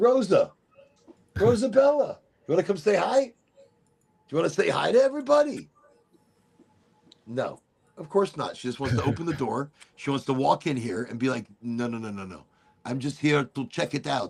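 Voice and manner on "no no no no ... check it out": put-on cat voice with French accent. Voicing her cat as it walks in through the door, Rosa the cat, French accent. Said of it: "I don't know why I think she's French".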